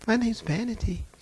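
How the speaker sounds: innocent, demure sweetness. Retelling a demon speaking through a lady: imitating a sweet demure voice. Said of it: "She sounded just as sweet and demure".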